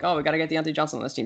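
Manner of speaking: normal talking voice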